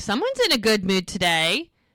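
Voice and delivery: put-on waitress voice, dry, sarcastic, swooping pitch. Retelling a show scene, a waitress teasing: imitating a sarcastic waitress. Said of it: "She's so funny 'cause she's sarcastic".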